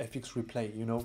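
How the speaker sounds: low, soft voice, slight English accent.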